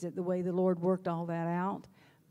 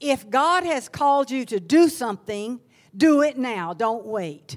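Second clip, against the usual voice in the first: booming, very loud, firm pulpit preacher voice; 4 semitones higher, 9 dB louder than usual. Retelling what a preacher said from the pulpit after communion, loud, firm preacher voice. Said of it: "he said in this loud, firm voice".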